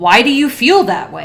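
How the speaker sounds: disapproving, negative-sounding tone. Instructor explaining how the registration exam reads a question, in a negative tone. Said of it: "it is with a negative tone of voice".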